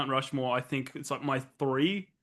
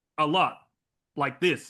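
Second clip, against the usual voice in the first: put-on halting speech rhythm, louder; 4 dB louder than usual. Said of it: "With that pause, that hesitation".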